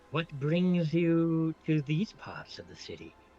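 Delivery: slow, deliberate put-on woman's voice. Voicing a woman who surprises the sneaking party from above: voicing a woman character. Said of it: "this voice is somewhat familiar to you".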